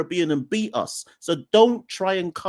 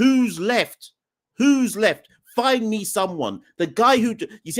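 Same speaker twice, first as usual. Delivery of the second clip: heated and agitated, slower; 4 semitones higher than usual. The speaker rants at a group who ran out their top scorer, getting heated. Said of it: "I'm getting heated now".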